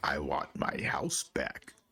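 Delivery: low, rasping, raspy ghostly voice. Retelling something that was said, the speaker voices it in a raspy voice. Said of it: "that raspy voice".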